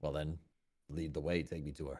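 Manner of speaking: unbothered and indifferent. Speaking as their character, facing a show of force: indifferent. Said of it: "like I'm completely indifferent to this".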